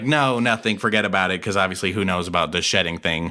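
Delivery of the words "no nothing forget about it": usual speaking voice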